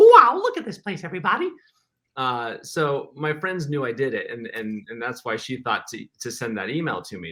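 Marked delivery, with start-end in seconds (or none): 0.0-1.5 very high, loud, squeaky cartoon mouse voice. Recalling college trips to Disney World, the speaker talks like Mickey. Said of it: "talk like Mickey".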